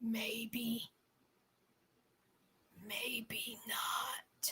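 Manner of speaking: very quiet, hushed, creepy sinister voice. Retelling what Cody said when the camera zoomed in: imitating Cody's weird sinister tone. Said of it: "in this weird, sinister tone in his voice".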